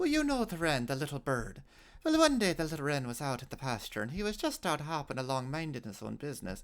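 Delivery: put-on Irish brogue accent. Retelling a story the father told him, in an Irish accent. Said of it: "you'll forgive my Irish accent".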